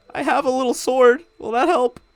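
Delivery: very high, tearful, sobbing, weeping voice. Voicing the bartender in the scene: weeping while talking. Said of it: "openly weeping".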